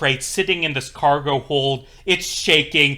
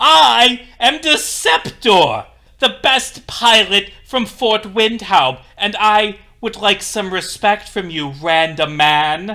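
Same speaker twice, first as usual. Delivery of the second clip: angry character voice; 5 semitones higher, 4 dB louder than usual. Voicing Deceptor answering a random man in a game scene, angry. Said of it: "he's like angry".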